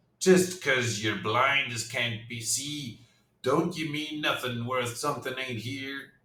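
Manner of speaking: cutting, barbed, taunting, mocking ghost voice. Reading an adventure aloud, one spirit answers another: barbed ghost voice. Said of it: "Answers a barbed voice".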